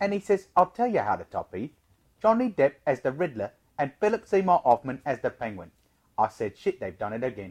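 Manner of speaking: put-on English accent. Reading a quote aloud as its speaker: Michael Caine voice. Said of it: "Can I read it as Michael Caine?".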